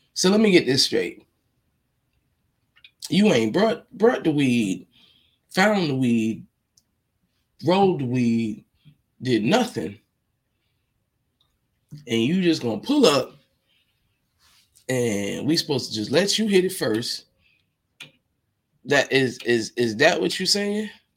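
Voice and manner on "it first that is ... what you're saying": ordinary talk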